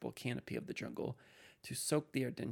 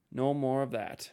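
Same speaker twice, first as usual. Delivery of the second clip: very loud, sharp, cutting snap; 9 dB louder than usual. A man shoves a companion back, snapping. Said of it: "he snapped".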